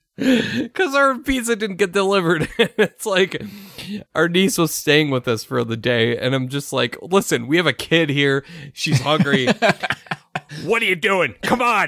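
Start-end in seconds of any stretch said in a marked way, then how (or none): 7.0-11.9 stern, strict dad voice. Retelling calling a pizza place over a missed delivery, using the dad voice. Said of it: "I had to bring out the dad voice".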